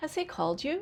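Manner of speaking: pitch climbs toward the end, up on "you". A speaker demonstrates the intonation of a yes/no question, rising yes/no question.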